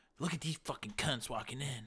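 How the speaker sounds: soft, hushed whisper. Retelling what girls at a party say to a friend: imitating a girl whispering. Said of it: "they'll whisper to their friend and say".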